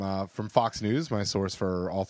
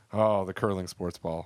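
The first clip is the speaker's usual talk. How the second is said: ordinary talk, nothing marked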